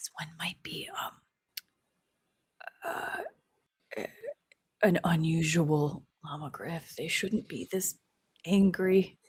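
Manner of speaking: very quiet, slow, barely there whisper. Imitating another player's character examining a creature: imitating a very quiet whisper. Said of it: "She's gonna whisper so quietly and be like".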